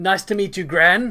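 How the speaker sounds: loud, taunting, mocking put-on voice. After slow clapping, Grappa greets Gran in Grappa's mocking voice. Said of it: "He puts on a mocking voice".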